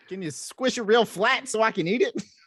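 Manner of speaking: put-on Brooklyn accent with very high pitch. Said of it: "Brooklyn accent".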